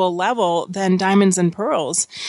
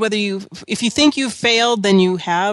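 ordinary talk

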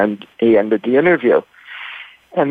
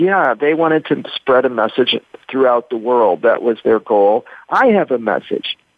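ordinary talk, nothing marked

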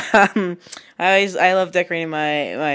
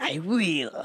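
sinister, evil cartoon villain voice; 10 dB quieter than usual. Repeating a phrase for fun: evil villain voice. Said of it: "Like an evil villain".

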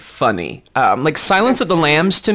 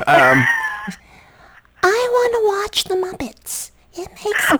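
creepy put-on voice. Using his other voice, the one he was told is creepy; creepy put-on voice. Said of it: "Oh my God, it is creepy".

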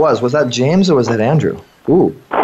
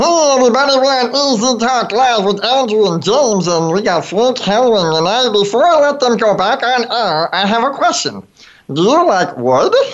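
high, squeaky hand puppet voice; 7 semitones higher than usual. Asking the show's guests to guess the Full House character, doing a Mr. Woodchuck impression. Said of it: "my little impression of that Mr. Woodchuck".

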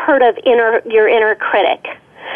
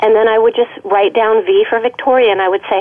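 normal talking voice

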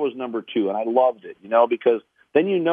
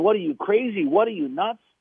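put-on young kid voice screaming, high; 8 semitones higher than usual. Retelling a parable, the young kid screaming after being pulled from water: imitating a screaming kid. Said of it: "the young kid is screaming".

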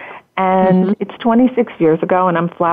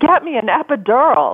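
acted-out, high-pitched screaming; 6 semitones higher than usual. Retelling the moment in labor, imitating her own screaming. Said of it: "I was screaming".

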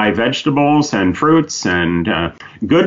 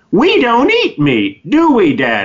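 acted, loud, very high little-boy voice, wide and slow; 11 semitones higher than usual. Retelling a three-year-old's question in the store: imitating a child speaking loudly. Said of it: "he said quite loudly".

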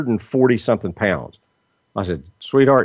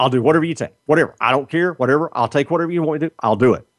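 frantic, high-pitched, babbling, rattled-off panic; 5 semitones higher than usual. Retelling what she said when told to change her diet, imitating her panicking. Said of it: "She was panicking".

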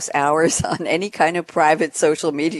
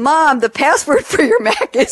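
very high, raised, shouted call; 10 semitones higher, 5 dB louder than usual. On live TV, calling out to her mom, retelling a yell. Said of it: "I'm yelling it out over live TV".

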